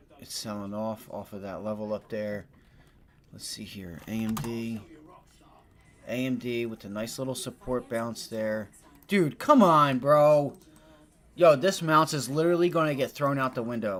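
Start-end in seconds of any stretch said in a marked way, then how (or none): 9.1-13.1 loud, frustrated, fed-up shouting. A streamer live on stream, yelling. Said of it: "I'm sorry for yelling on the stream".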